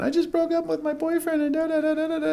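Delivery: very high, weepy, sobbing wail. Retelling how teenage coworkers came in crying: imitating a crying teenager. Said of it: "crying, going".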